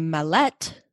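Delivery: Mallet with stress on the second syllable, -let. Suggesting another way to say a surname: mallet stressed on second syllable. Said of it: "Put the emphasis on the second syllable instead of the first one".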